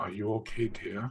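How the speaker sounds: gentle-toned voice. Kneeling and shaking a sleeping character's shoulder: gentle-toned voice. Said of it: "a surprisingly gentle-toned Mizia".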